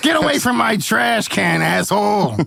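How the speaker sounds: rough, creaky, raspy New York voice. Asked to do an Oscar the Grouch voice, the speaker tries it: Oscar the Grouch impression. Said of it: "just sounds like a homeless guy in New York".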